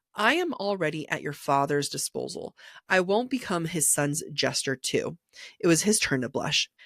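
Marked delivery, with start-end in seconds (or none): none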